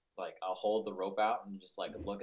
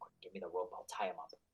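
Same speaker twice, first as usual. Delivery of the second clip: fast, theatrical stage whisper; 4 dB quieter than usual. Spotting a guard, a player's character asks a companion for rope: stage whisper. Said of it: "I'm gonna like stage whisper".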